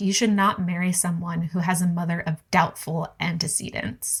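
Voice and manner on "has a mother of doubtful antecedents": ordinary talk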